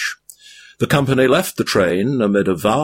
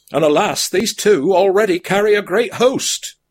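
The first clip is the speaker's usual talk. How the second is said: very high-pitched, crying-out exclamation; 10 semitones higher than usual. Narrating a story, one of a company cries out as a train appears: crying out. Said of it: "cried Sam".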